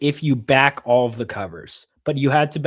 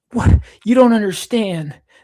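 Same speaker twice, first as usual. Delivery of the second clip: put-on raised, pitched-up fifteen-year-old teen voice; 8 semitones higher, 5 dB louder than usual. Talking about their voiceover work, the speaker does their fifteen-year-old voice. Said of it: "I do my like fifteen-year-old".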